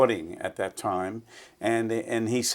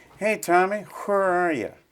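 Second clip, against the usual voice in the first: put-on strong East Tennessee accent, pitched up; 9 semitones higher than usual. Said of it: "it was that strong East Tennessee accent".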